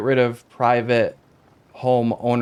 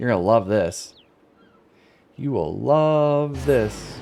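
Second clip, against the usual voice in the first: sarcastic tone, leaning on a drawn-out "love". Before checking the odds on a large plot: sarcastic tone. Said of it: "I'm being sarcastic".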